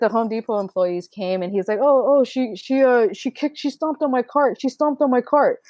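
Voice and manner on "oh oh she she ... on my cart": pitched-up, put-on playing-the-victim voice. Retelling a store quarrel, imitating someone playing the victim. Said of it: "playing victim".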